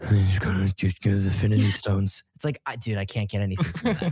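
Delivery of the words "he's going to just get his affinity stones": mock gruff, breathy movie-dialogue delivery. Complaining about unclear lines in Star Wars and Marvel movies, imitating gruff breathy movie dialogue. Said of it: "gruff and breathy".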